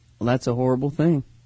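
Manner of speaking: deep country cowboy accent, western style. An actor tries one of his lines from his new movie, in a cowboy accent. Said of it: "here's one of my lines".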